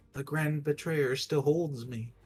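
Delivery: tiny, small little voice. Voicing one more spore from a pack: little voice. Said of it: "one more little voice saying".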